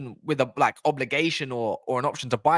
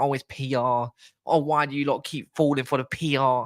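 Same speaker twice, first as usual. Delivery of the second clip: taunting, belittling, derisive put-on little voice. Mocking a critic who keeps calling it PR: mocking little voice. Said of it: "when he does that little voice".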